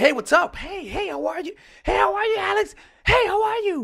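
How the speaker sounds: very high, loud, pumped-up, energetic, pitch climbing. Showing what high energy sounds like when greeting someone, high-energy greeting. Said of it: "high energy in terms of".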